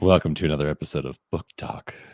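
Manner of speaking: low, smooth mock public radio announcer voice. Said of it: "I feel like I'm listening to N P R right now".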